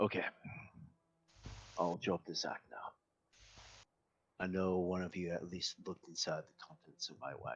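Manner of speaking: hushed, confiding tone, showman manner dropped. The carnival leader leans into both of them to drop his act, leaning in. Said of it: "Yeah, I'm the main carnival leader, / Then he leans into both of you. / Yeah, I'm the main carnival leader, / As he goes back to his regular hyped up voice".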